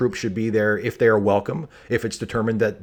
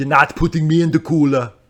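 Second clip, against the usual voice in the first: loud, high-pitched movie-villain voice, barked out; 6 semitones higher, 6 dB louder than usual. Showing how to get into the voice with a movie line: Arnold Schwarzenegger voice. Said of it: "how I get into the Arnold voice".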